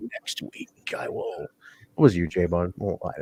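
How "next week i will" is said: breathy, whispered masked luchador voice. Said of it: "the masked luchador voice".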